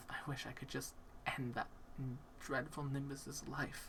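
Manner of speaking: quiet tearful murmur. A game narrator voices a character weeping in the tub: weeping softly under breath. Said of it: "you hear the softest weeping".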